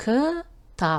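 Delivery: ктаб pulled apart by syllable.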